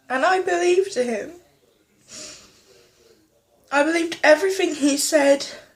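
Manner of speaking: crying while talking. Telling a camera about a father's cruel words, crying while talking. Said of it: "I'm sorry for crying".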